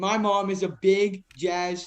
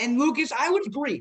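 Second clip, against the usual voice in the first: cracking voice, jumping high partway through; 6 semitones higher than usual. Discussing the Jazz and agreeing with Lucas, voice cracking. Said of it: "voice crack".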